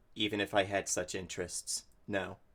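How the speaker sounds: dry, dismissive deadpan, very low and very soft, put-on. Retelling a scene where he turns to her and answers, acting out a deadpan reply. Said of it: "deadpan, and just looks at her and goes".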